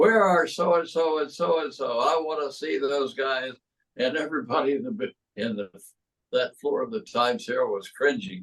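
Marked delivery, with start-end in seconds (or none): 0.0-3.5 brash, high-pitched, demanding, acted-out yell. Retelling a wrestler storming a newspaper floor: imitating Fritz yelling. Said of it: "he started yelling".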